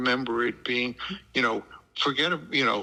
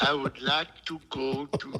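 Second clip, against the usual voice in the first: mimicked French accent attempt with a touch of Brooklyn. Retelling a story about a woman's French accent, imitating Susan's French accent. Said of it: "with a little touch of Brooklyn".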